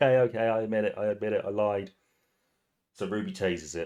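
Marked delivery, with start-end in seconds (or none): 0.0-1.9 blubbering, sobbing, pleading through tears. Retelling a man being faced down by his team, imitating him crying. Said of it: "and he's crying".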